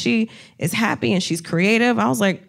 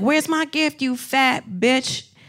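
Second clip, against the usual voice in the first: put-on drunk voice, higher; 4 semitones higher than usual. Retelling what a drunk heckler said: imitating a drunk heckler. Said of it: "started heckling me".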